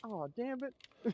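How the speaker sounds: put-on very high-pitched, country-ish accent. Retelling a friend's exclamation in a game: imitating a friend's country-ish accent. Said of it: "country-ish accent".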